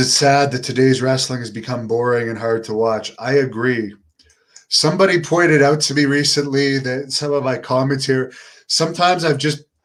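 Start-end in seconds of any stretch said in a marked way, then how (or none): none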